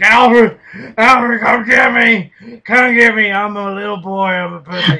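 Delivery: very loud, high, frightened, scared pleading cry. Retelling a movie scene, mocking Batman calling Alfred for help: mock-scared Batman impression. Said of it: "He's like".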